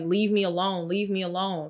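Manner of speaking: put-on tearful crying voice. Retelling how a son, followed by his parents, cried: imitating someone crying. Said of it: "And he's crying. He's like".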